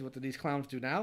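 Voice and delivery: ordinary talk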